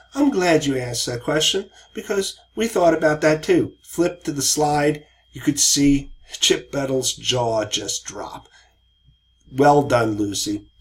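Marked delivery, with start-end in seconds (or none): 0.2-3.7 gentle, sweet, put-on English accent. Retelling a teammate's answer to a client's question: sweet english accent. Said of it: "in a sweet English accent".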